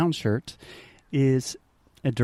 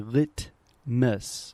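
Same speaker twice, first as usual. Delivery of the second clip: slow, careful articulation with clearly aspirated t in litmus. Showing a learner the slow careful way to say the word: true T. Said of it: "speaking very slowly and really trying to articulate".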